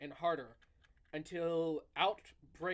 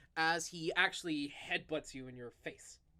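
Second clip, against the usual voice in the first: ordinary talk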